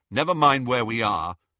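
ordinary delivery

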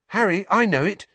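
out of breath. Neville jogs up behind Harry and calls to him: panting. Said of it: "Someone panted up behind him".

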